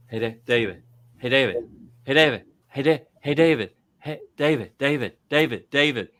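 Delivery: put-on drunk voice, calling out. Retelling how a drunk friend at a bar called for attention: imitating a drunk friend calling for attention. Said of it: "he does that thing like a drunk girl does when she's trying to get your attention".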